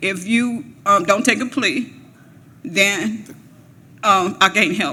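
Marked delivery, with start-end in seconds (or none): none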